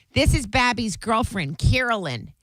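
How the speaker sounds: put-on strong Chicago accent with thick Chicago vowels. Retelling how a fiancé's mother introduced the speaker: Pat's strong Chicago accent. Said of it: "had a really strong Chicago accent".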